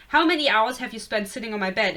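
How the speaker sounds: ordinary talk, nothing marked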